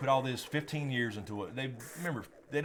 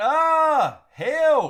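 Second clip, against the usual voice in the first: mock yelling, higher and louder; 15 dB louder than usual. Retelling hearing a housemate's yell in the night, imitating someone yelling for help. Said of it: "the yelling was a yell, like".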